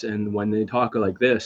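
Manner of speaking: low, dead-level, tuneless flat monotone. Describing how dating coaches talk, the speaker imitates them in a flat monotone voice. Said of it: "like the voice is monotone. Now they speak like this".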